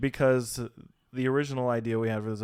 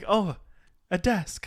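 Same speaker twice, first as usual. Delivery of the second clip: play-acted, thrilled, high, excited voice; 7 semitones higher than usual. Imitating Mother looking at the new desk: imitating Mother sounding excited. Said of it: "She looks excited".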